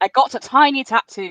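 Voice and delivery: really bad fake British accent, pitched high. Asked what happened, she answers her friends: really bad British accent. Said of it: "What the hell was that accent?".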